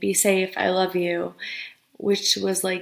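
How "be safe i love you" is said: normal talking voice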